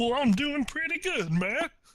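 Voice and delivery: very high, silly, goofy put-on voice. Podcast co-hosts bantering on their show: stupid silly voice. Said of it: "Why are you doing a stupid voice?".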